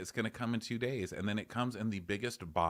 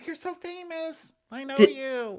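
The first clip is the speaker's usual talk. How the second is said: mock very high, very loud, drawn-out shrill squeal; 11 dB louder than usual. Retelling recognizing the person doing the zombie voice: retelling an excited squeal. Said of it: "I did squee a little bit".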